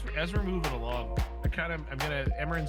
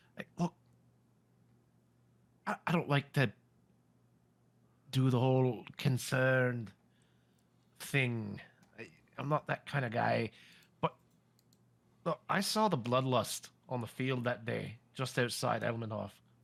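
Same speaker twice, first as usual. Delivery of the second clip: whispered, slower. Speaking privately to someone so that nobody else hears, in a whisper. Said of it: "I'm gonna kind of like whisper this".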